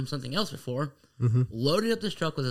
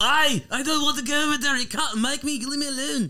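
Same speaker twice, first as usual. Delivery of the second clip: put-on Irish accent in a very high voice; 11 semitones higher, 4 dB louder than usual. Acting out a man who can't stop talking in an irish accent, in an irish accent. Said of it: "cannot control talking in an Irish accent".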